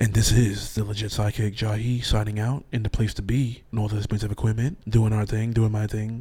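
low-pitched voice. The podcast sidekick signs off at the end of the episode, in a deep voice. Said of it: "Talking in a deep voice".

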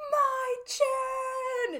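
shrill, very high, drawn-out, top-of-the-lungs scream. Retelling a drama scene where Ha Rim spots her: imitating Ha Rim screaming at the top of his lungs. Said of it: "screams at the top of his lungs".

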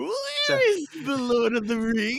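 high creature voice. Asked by the others to do a Smeagol, the speaker gives a Smeagol impression. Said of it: "Can you do a Smeagol?".

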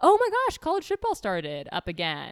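clearly faked enthusiasm with sing-song pitch swoops. Reacting to news that college football started up again, with faked enthusiasm. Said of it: "She said, faking enthusiasm".

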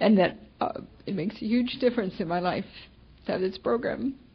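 tearful, crying, grateful speech. Sharing at a recovery meeting, thankful for the tapes: crying with gratitude. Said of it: "I'm crying because I'm so grateful".

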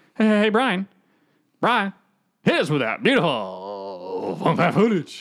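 stretched-out, slow voice. Trying again to imitate Jay asking Brian for footage: Jay impression. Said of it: "You're not even saying it right again".

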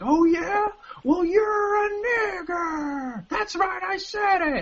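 acted furious rant, very high and very slow. Retelling an outburst at hecklers during stand-up: imitating Michael Richards blowing up. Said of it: "blew up and said pretty much".

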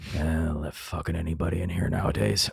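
loud, audible stage whisper meant to be overheard. Retelling what someone at a nearby table said about them, in a loud stage whisper. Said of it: "stage whisper, whisper loud enough for you to hear".

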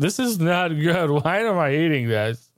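acted, slow voice, right on the verge of tears. Retelling eating a bad chalupa: retelling almost crying. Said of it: "almost crying, saying".

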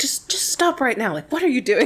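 mock motherly scolding yell, high. Describing her stopping people scheming for money, re-enacting her words: retelling a motherly yell. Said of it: "she like yells at them like a mother".

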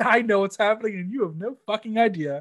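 mock laughter while talking. Voicing what a man is thinking as he laughs, imitating someone laughing. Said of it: "And he's laughing like".

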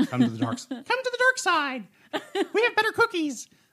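squeaky, very high, loud, bouncy cartoon mouse voice. Asked to do the Darth Vader voice, the speaker tries: Darth Vader line in Mickey Mouse voice. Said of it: "I've got this little Mickey Mouse voice".

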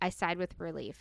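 ordinary delivery, nothing marked

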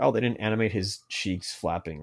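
usual speaking voice

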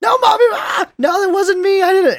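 put-on very high, loud, shrill screaming kid voice. Retelling a kid pleading with his mom who came in: imitating a kid screaming. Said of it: "the whole screaming match".

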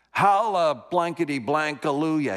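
put-on mocking yell. Retelling a man mocking everybody who went up, retelling a mocking yell. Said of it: "You just start yelling".

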